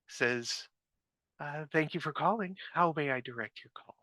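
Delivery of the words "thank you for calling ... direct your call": prim, professional voice, pitched up and quick. Retelling how someone other than Juliet answered her phone, imitate a prim head-nurse voice. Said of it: "A very professional, prim lady's voice, the kind that screams, head nurse".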